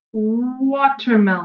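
"watermelon" drawn out slowly, sound by sound.

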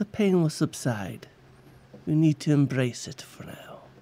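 soft, dark druid character voice. Game master voicing the dark druid answering a player's character in pain, in a dark druid voice. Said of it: "And you see the dark druid".

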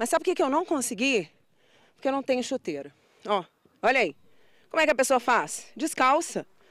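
out of breath, puffing and panting between phrases. After trying football with the players, the speaker talks out of breath, panting. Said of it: "respiração ofegante. Mal consigo falar".

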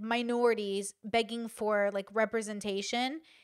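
plain

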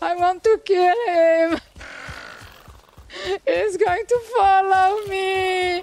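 whiny, complaining, whinging tone. A player being chased in a game calls out to teammates, whining. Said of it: "stop whining all the time!".

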